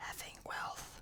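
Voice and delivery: barely audible, very quiet, breathy whisper. Voicing a captain leaning up to a stone: whispering in character. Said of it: "leans up to the stone and whispers".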